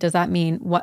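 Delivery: put-on crying voice. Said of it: "crying because she was like".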